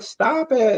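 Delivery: very high-pitched, whining, pleading cry. Retelling a sleep paralysis episode, imitating own whining.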